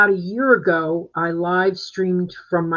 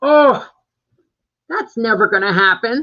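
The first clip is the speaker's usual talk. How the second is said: higher, louder, confident, naive-sounding voice. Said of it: "that's exactly what I sounded like".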